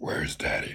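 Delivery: whispered, breathy, put-on gruff grumble. Retelling how the brothers used to grumble a question: imitating a gruff grumble. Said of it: "We'd grumble".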